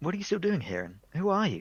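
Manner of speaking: mildly anxious voice, high pitch, big swoops. Describing a golf game, quoting a club guy who suddenly appears: mock-worried. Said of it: "he's got like a kind of slightly worried voice".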